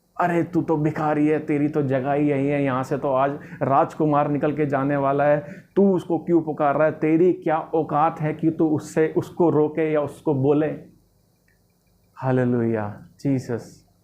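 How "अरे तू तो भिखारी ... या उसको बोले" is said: normal talking voice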